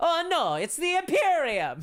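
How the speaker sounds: put-on Italian accent. Joking that the Tau should sound Italian: Italian accent. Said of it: "the Tau should have an Italian accent".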